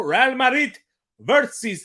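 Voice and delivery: put-on Spanish accent. Announcing the match, saying the first team's name: put-on Madridista accent. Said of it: "a little, uh, Madrista accent there".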